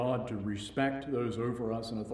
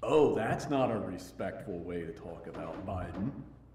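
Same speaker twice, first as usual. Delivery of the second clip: sneering, sarcastic, mock-polite, mocking tone; 4 semitones lower than usual. Recounting an overheard conversation between two boys, retelling a mocking remark. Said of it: "very mockingly told the other".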